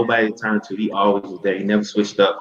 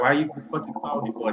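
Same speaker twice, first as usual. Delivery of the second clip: mock irritated, pitched-up, annoyed cussing; 5 semitones higher, 8 dB quieter than usual. Retelling how he answers her late-night call, mock-angry cussing out. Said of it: "he'll cuss me out for calling him late".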